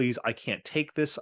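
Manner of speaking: put-on tearful pleading. Retelling an actor's call to the studio chairman, imitating Rob Morrow crying. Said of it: "crying and saying".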